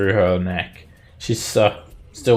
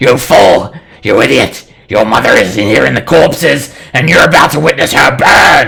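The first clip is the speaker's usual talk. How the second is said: very loud, rasping, screeching demonic devil voice; 4 semitones higher, 12 dB louder than usual. Narrating a game, voicing the devil screeching at Raven: screeching devil voice. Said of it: "then the devil screeches at you".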